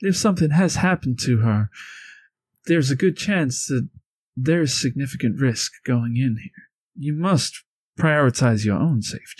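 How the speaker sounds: soft, mild-mannered character voice. Voicing Mito in a role-played scene, Mito's soft voice. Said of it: "Mito is the soft voice".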